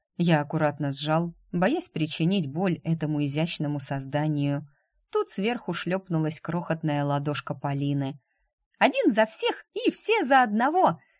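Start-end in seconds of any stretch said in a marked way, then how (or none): 8.8-11.0 gleeful, cheerful, very high-pitched, swooping exclamation. A child slaps her tiny hand on top of the others' hands: cheerful exclamation. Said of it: "весело воскликнула она".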